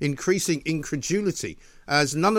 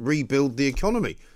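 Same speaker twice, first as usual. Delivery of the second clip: ordinary delivery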